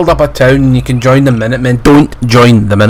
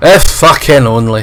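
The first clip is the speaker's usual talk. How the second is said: plain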